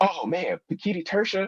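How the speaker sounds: very high, eager teacher voice. Retelling a teacher's excited answer to a question: bad Leslie impression. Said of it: "it's a bad impression of Leslie".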